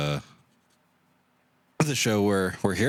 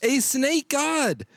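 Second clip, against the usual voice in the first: slow, high-pitched yell. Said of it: "Don't mean to yell like this".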